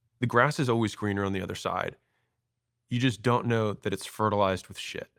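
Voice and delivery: ordinary talk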